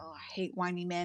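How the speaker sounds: slow, contemptuous, fed-up, scornful disdain. Voicing Jezebel rolling her eyes at the crying man: eye-rolling disdain. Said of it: "Jezebel's gonna roll her eyes. She goes".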